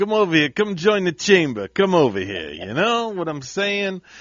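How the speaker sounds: put-on New York accent. Hosts goofing on accents while promoting the chamber, in a New York accent. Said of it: "That's not Italian. That's that's Yankee".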